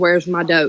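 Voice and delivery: ordinary talk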